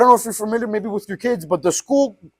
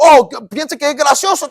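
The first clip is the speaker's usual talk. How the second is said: sharp, irritated, angry snap, loud and high; 5 semitones higher, 5 dB louder than usual. Telling a story, imitating a janitor snapping at the speaker. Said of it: "Buddy just started snapping at me".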